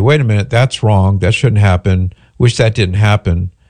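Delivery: ordinary delivery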